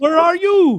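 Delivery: horrible, fake, put-on Indian accent, very high. Retelling a call from a stuck elevator to someone in India, horrible fake Indian accent. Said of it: "that's a horrible accent".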